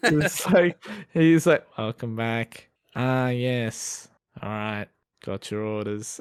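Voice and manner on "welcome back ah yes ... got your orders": flat, sleepy, low, slow monotone drone. Retelling how a worker took their order: imitating a monotone. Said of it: "he was just so monotone about everything".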